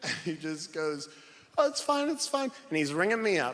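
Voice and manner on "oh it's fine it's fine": breezy, dismissive, very high put-on British accent. Retelling a shoe clerk calming a crying customer: imitating British shoe clerk. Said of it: "'cause he's British".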